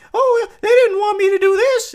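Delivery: very high, loud squeak. Retelling how someone made a tiny net talk: Elmo voice. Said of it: "he gave it an Elmo voice".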